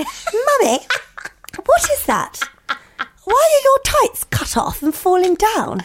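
put-on very high, swooping, plummy posh child's voice. Acting out the children wandering downstairs: imitating Dixie's posh voice. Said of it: "Dixie's so posh, isn't she?".

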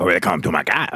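put-on cab driver accent. Telling a story about a cab ride, trying the driver's accent: put-on cab driver accent. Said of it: "whether to do the accent".

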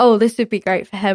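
ordinary talk

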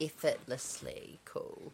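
slow, careful pace. Retrying a word after being told to slow down: said slowly. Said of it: "it's quite cool when you say it slow".

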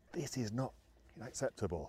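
put-on soft, hushed voice in a French accent. Retell what he said at half time after you got smashed, in Arsene Wenger's French accent. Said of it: "in his French accent".

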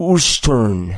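put-on thick Colombian accent. Recalling how their father answered where they lived, thick colombian accent. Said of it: "with his thick Colombian, you know, accent".

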